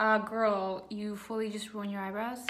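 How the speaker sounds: plain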